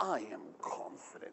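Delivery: quiet, cool, self-assured voice loaded with attitude. Leading a group exercise, demonstrating the phrase confidently, with attitude. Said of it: "Say it with me like that".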